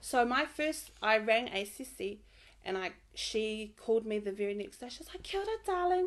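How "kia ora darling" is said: very high-pitched, nanny-like counsellor voice. Retelling a counsellor's phone greeting, Super Nanny voice. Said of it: "talks like Super Nanny".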